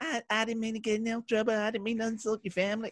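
very high-pitched celebrity-style voice. Comparing a surprisingly soft voice to an impression: Mike Tyson impression. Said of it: "It's like when Mike Tyson".

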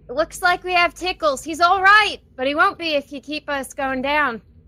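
very loud booming shout, high-pitched and loud. A player's character calls to the people up above, voice booming. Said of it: "make my voice boom 3 times louder".

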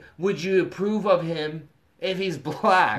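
plain

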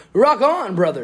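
loud, high, belted cool cartoon voice. Talking about becoming a voice actor, the speaker does a Sonic the Hedgehog voice. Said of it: "Do Sonic".

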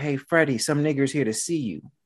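put-on casual, mild calling out. Retelling how a boss called to a worker in the back: imitating someone yelling. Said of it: "he yells out".

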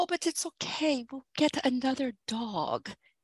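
put-on soft, slight French accent. Speaker quotes a man's reply as the children cry, in his french accent. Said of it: "in his beautiful little French accent".

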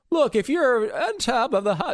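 very high, slow, wavering voice. Imitating Elizabeth Warren talking about billionaires: wavery weak Elizabeth Warren voice. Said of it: "she has that really wavery, like, weak voice".

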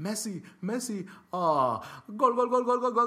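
mock commentator, very high, wild, loud, frenzied. Describing a radio commentator calling a goal in a match, imitating an excited goal call. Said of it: "And he just goes off".

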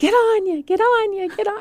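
shrill, high, loud football crowd-style yell. Retelling a woman at lunch telling a soccer story: imitating a woman yelling. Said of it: "she starts yelling".

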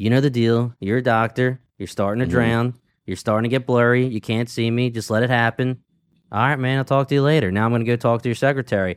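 mock nonchalant, casual and unbothered tone. Retelling a scene where a villain speaks to a doctor he stabbed, retelling a nonchalant threat. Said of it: "so nonchalantly tells him".

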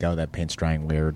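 acted placid, calm, unbothered, matter-of-fact tone. Quoting a line that was offered on the show, put-on calm voice. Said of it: "The way you say it is so calm".

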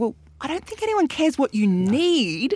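mock ranting with the word "need" drawn out. The speaker recalls reacting to a seller on television, retelling screaming at the TV. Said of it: "I'm screaming at the television".

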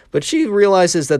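voice breaking mid-line, cracking up high. Telling a story about a classroom, voice cracking. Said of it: "Oh, my God, voice crack".

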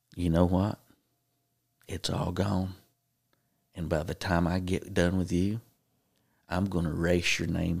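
whispered, as in the ear. Retelling what someone came up behind and whispered in his ear, whispering. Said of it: "whispered in my ear and said".

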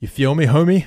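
put-on, mock gangster way of talking. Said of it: "That was gangster".

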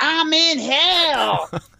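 mock, very high, loud yell, "hell" stretched long. Retelling someone slamming a door open and calling out: imitating Kitty shouting. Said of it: "as loud as she can say it".

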